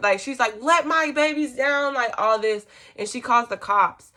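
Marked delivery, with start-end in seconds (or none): 0.6-1.9 put-on high, shrieking, screaming voice. Retelling what a friend's mom screamed outside the room: imitating someone screaming. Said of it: "screaming at".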